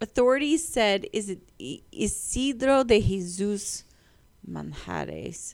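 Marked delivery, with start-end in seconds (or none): 1.9-5.5 very slow Spanish accent, swooping pitch. Reading a name from a news story aloud: Spanish accent. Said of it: "I had to say that with, like, an accent".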